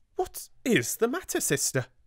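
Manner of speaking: startled, alarmed, very high-pitched cry. Opening the door to her sister's angry face, she gives an alarmed exclamation. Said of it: "she ejaculated".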